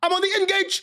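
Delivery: mock shout, very high and shrill. Retelling how a guy in tv skits would act: imitating a guy shouting. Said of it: "He would just shout it".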